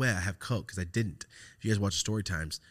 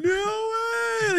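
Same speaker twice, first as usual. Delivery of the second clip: mock delighted gasp, higher and louder; 8 dB louder than usual. Retelling own reaction when offered a line: imitating own past happy surprise. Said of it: "I was so happy".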